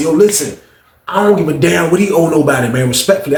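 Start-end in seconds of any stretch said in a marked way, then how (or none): none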